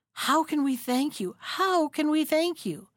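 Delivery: hardly able to speak. Freed from the bear skin, thanking their rescuer, stammering, hardly able to speak. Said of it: "they stammered, hardly able to speak".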